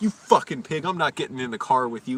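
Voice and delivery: mock yelled, hollered cursing. Retelling yelling at a coworker who played loud music: retelling a yell. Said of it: "I just fucking yelled at him".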